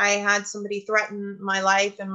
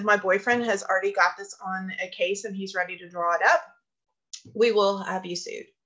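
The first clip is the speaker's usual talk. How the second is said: plain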